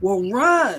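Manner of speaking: acted, urgent but easy mild yell. Retelling screaming at her to run from the bees: imitating own past scream. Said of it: "I scream at her".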